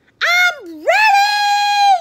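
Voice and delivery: very loud, shrill, high yell, "ready" drawn out. Froggy, called by his father, answers back, yelling. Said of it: "yelled Froggy".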